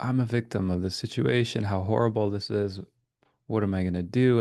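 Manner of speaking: ordinary delivery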